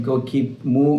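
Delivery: plain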